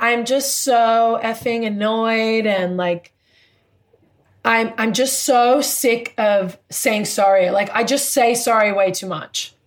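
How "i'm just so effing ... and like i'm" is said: usual speaking voice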